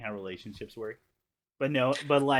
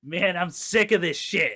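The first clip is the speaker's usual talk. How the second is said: put-on old-sounding middle-aged man voice, raised and high; 6 semitones higher, 5 dB louder than usual. Retelling a kid's line from a movie, imitating a middle-aged man. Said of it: "like a middle-aged man goes".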